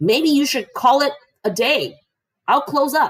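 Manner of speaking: very high, shrill shout. Wiping tables in the food court, he yells across to another man: yelling. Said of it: "he yells".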